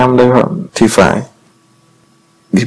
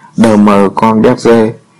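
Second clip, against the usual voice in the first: ordinary delivery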